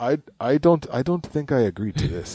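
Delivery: terrible put-on Jamaican accent. Imitating Usain Bolt answering a race challenge: terrible Jamaican accent.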